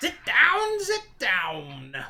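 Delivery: voice like crunching leaves. Voicing a little old woman inviting guests to sit: voice like crunching leaves. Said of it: "in a voice reminiscent of crunching leaves".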